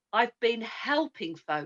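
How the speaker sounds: ordinary talk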